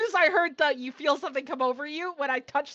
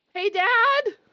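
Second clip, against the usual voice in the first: loud, high-pitched yelling call; 8 semitones higher, 5 dB louder than usual. Voicing a character who stops and yells to her father: yelling to her father. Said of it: "yells out and tells her father".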